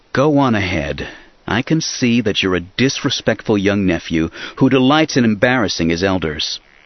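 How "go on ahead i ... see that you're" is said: ordinary delivery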